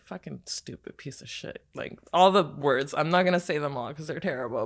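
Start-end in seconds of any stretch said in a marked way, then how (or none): 0.1-1.6 muttering under the breath, lower and quieter. Retelling own reaction in traffic: imitating muttering under breath. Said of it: "I mutter under my breath".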